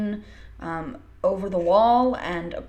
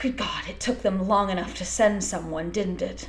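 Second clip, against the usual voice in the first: snooty, haughty, snotty, arrogant tone. Narrator voicing a man who speaks from the carriage-house hole: snotty, arrogant voice. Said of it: "kind of a snotty, arrogant voice".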